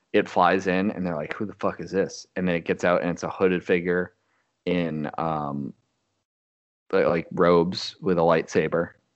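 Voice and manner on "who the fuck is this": plain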